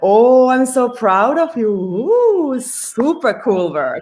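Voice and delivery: proud, drawn-out ooh. Demonstrating how to praise a dog: very proud voice. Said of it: "like a very proud voice".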